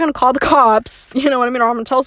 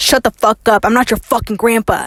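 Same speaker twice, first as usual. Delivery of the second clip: put-on angry voice, faster. Retelling what a drunk stranger snapped at people calling him grandpa, imitating an angry man. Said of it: "a genuinely angry voice".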